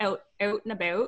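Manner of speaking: put-on Canadian accent. Showing the accent people wrongly associate with Canadians: fake Canadian accent. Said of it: "the fake Canadian accent is that people always associate".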